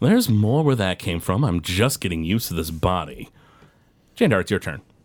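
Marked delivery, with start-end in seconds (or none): 0.0-3.3 cocky villain voice, smug and self-satisfied. Voicing a foe answering a player's taunt mid-fight: smirking. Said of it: "And he just sort of smirks".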